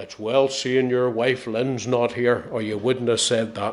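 deep, rough, heavy voice. Telling folks what Ed Jemison said to the speaker, in Ed Jemison's big gruff voice. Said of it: "he said in a big gruff voice".

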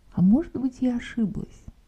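curious, intrigued, interested tone. Showing how to question whether one was mistaken, asking with curious interest. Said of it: "А с интересом".

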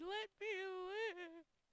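very high, loud, stretched wailing with crying. A streamer, after spotting two spiders, acts out mock crying. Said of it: "Just start crying like".

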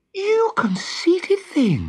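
very high, swooping, cried-out exclaiming voice. Narrator reading Wendy's retort to the boy, exclaiming. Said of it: "exclaimed Wendy".

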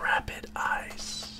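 very quiet, hushed, ultra cool whisper. Showing how a name must be said: cool whisper. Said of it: "You gotta say it like a whisper. Like it's the coolest thing you've ever said".

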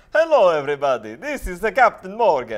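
put-on Italian accent. Opening greeting to everybody, spoken in an italian accent. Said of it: "It's Italian".

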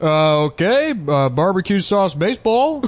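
slow, high gibberish. Imitating an impersonator who does Obama without speaking English: Obama impression. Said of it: "So he's just like".

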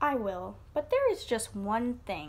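ordinary delivery

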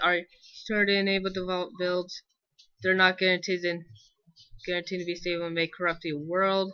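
ordinary talk

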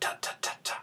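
voiceless whispered ta syllables. Demonstrating tonguing practice by repeating the syllable ta, whispered ta syllables. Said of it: "I'm just saying the word ta, whispering".

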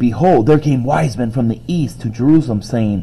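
plain

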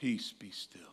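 very calm, gentle, hushed, soft voice. Retelling the storm scene from movie adaptations, in a calm Jesus-y voice. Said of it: "He said in a very Jesus-y, calm voice".

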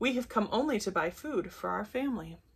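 ordinary delivery, nothing marked

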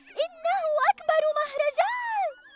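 very high, grateful, thankful shout. The narrator reads the ants' cry on seeing the food: shouting gratefully. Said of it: "صرخن بامتنان".

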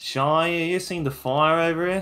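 put-on Australian accent. Imitating a teammate's line to tease them, imitating an Australian accent. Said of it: "You sounded so Australian then".

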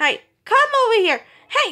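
high, loud calling voice.

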